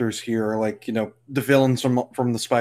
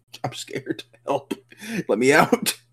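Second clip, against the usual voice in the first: put-on scared pleading voice; 3 semitones higher than usual. Voicing a character on screen who wants out: voicing Peter, mock scared plea. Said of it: "That's Peter saying that to us".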